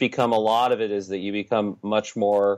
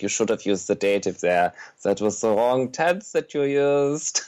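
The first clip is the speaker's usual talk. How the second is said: fussy, nitpicking tone with "used" stretched out. Retelling how Germans react to a grammar error: imitating Germans correcting grammar. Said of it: "and they're like".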